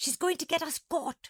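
gasping. Monkey speaks while Nana howls to the Doberman; gasped. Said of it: "Monkey gasped".

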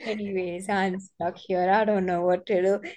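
mock emotionless voice. Retelling a call from a woman who was stuck, imitating an emotionless voice. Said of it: "her voice is like, no emotion".

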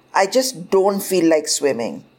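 ordinary delivery

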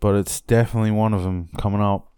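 fast, rattled-off delivery.

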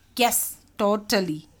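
ordinary delivery, nothing marked

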